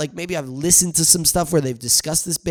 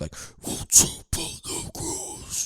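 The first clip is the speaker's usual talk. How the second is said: slow evil skeleton whisper with no softness. Speaker imagines how a skeleton would sound, in a very evil skeleton voice. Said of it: "Like a very evil, like maybe even like a like if a skeleton had a voice".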